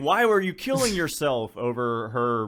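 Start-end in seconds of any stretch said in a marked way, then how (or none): 0.0-1.6 high, pitched-up screaming outburst. Suggesting new audio over a panicked scene: Neil Breen screaming. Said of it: "put Neil Breen screaming".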